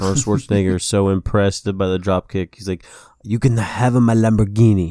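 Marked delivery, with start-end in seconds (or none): 3.2-4.9 put-on Italian accent, lower and slower. Imagining a reaction to a dropkick, the speaker voices Arnold Schwarzenegger, Italian-sounding Schwarzenegger impression. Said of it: "Why does he sound Italian?".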